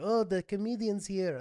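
put-on New York Brooklyn accent. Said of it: "they have this accent".

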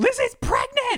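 very high, freaked-out screaming. Retelling shouting out the pregnancy news at home: retelling own screaming. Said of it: "I was just screaming".

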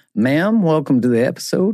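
very high, thickly laid-on cowboy accent. Wearing a cowboy hat on the show, speaking in a thick cowboy accent. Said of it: "the accent just got a little thicker".

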